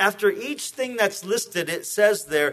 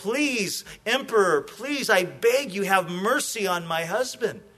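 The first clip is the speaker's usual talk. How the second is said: mock imploring, earnest begging plea. Telling the story of a wife before the emperor on her husband's execution day: retelling a woman's begging. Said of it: "she came just begging".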